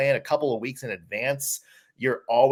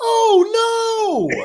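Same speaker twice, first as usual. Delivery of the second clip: very high, loud, excited announcer yell; 7 dB louder than usual. Retelling how a broadcaster called a goal: imitating an excited announcer voice. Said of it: "his excited announcer voice just going".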